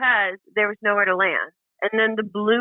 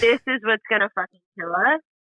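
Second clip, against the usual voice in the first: belly-laughing through the words. Retelling what someone said in a balloon crash: imitating someone belly laughing. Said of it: "he's belly laughing".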